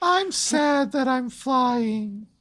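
very high, mopey cartoon voice. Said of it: "the cheat doing a voice of Strong Sad".

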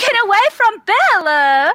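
desperate, very high, shrill, loud scream. In a tabletop game, a character calls out to protect a friend, screaming out. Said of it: "Merrickan screams out".

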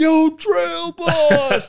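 very high screaming shout. Retelling how people in town called out: imitating people screaming. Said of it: "literally screaming at me".

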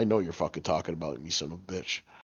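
low, quiet, grumbling dog voice.

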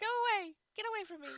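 piercing, shrill screech at full, very loud volume. Telling how her grandmother yelled at people she saw: imitating grandma yelling. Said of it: "She would yell at him".

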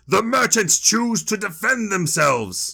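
high battle shout. Asked how it should sound, the player has his character shout out: Helgi shouting out. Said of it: "Helgi shouts out".

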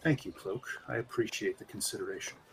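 very quiet, hushed, breathy near-whisper. A cloaked figure inclines his head to you and thanks you, in a soft voice. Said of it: "says in his soft voice".

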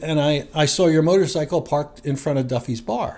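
ordinary delivery

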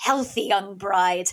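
put-on big, loud, carrying voice. Retelling an older acquaintance congratulating the husband: imitating a loud voice. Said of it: "in a loud voice".

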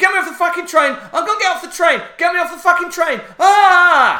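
acted panicked girl swearing. Retelling a girl's panic attack on a train: imitating a panicked girl swearing. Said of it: "she's having a panic attack, and she's saying something like this. She's swearing".

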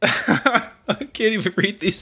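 slow speech breaking into laughter. Trying to read bars aloud to another speaker: laughing while talking. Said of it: "I'm laughing too much".

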